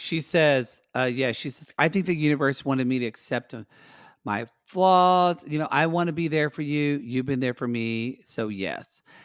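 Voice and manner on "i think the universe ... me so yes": ordinary delivery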